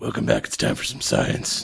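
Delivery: gravelly, creaky caped-hero voice. Speaker welcoming listeners back, in a Batman voice. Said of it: "Is that your best Batman voice?".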